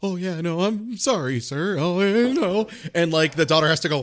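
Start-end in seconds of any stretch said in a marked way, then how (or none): 0.0-2.7 play-acted frightened voice, slow and drawn out. Describing Adam Sandler's film scene, imitating Adam Sandler's scared voice. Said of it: "his voice is like".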